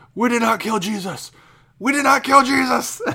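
very high-pitched, frantic, freaked-out yell. Describing a man who caused a commotion as he left, the speaker is retelling a yell. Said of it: "he yells".

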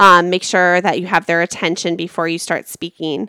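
ordinary talk

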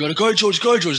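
mock high-pitched, screaming cheering yell. Retelling how the boys pressured a rider: imitating people screaming. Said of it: "they're all just screaming".

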